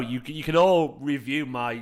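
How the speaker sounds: usual speaking voice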